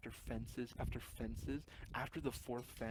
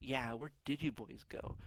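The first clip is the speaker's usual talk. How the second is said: camp, super flamboyant, effeminate-sounding voice. Retelling what the other dad said, imitating a flamboyant feminine man. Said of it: "why I'm making them sound the exact same as like a fucking feminine guy".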